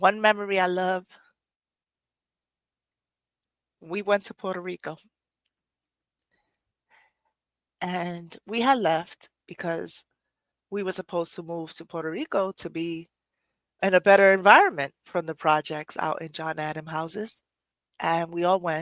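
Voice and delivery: about to cry, near tears. Speaker sharing a beloved memory about her mom, near tears. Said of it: "I feel like I'm about to cry".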